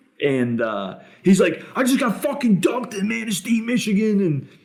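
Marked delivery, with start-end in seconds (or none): 1.8-4.4 very high, shrill, furious in-your-face scream. Retelling a wedding fight story, imitating someone screaming angrily. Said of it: "screaming in all these girls' faces".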